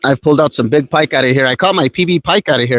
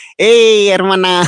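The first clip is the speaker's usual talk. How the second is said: joking put-on northern New Mexican accent, pitched up; 6 semitones higher than usual. Talking to a northern pike while fishing: put-on northern New Mexican accent. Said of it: "keep talking like a northern New Mexican".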